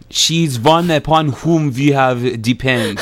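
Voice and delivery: loud, comic put-on Persian-accented English. Asked by the host to demonstrate a grammar mistake, Persian accent. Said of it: "if you find my Persian accent as funny".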